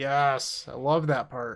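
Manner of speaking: slow, dry, heavily sarcastic drawl. Answering a question about the flooding part of a card game: sarcastic. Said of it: "He said sarcastically".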